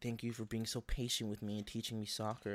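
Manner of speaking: normal talking voice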